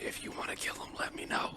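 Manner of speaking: hushed, quiet whisper. Answering another character's whisper, whispering back. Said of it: "I whisper back".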